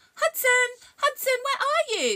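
very high, very loud calling shout. A character searches for her missing friend, calling for him, shouting. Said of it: "Lily shouted".

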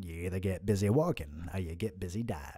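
very deep, low delivery. Answering a viewer's request to play the boss: Morgan Freeman impression. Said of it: "could I get a Morgan Freeman impression".

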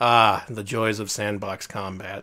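dry, flat monotone, slow deadpan. Quoting a flat line from a video: imitating a flat delivery. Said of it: "completely flatly said".

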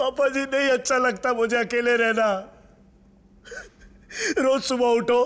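crying, words coming through sobs. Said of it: "अब तो रो क्यों रहा है?".

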